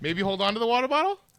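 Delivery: sweetly passive-aggressive. Retelling how the guide asked the boat to hold on to the bottle: imitating a passive-aggressive remark. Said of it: "passive aggressive".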